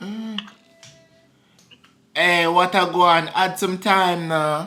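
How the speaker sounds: fake, put-on Jamaican accent. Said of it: "Use A Fake Jamaican Accent".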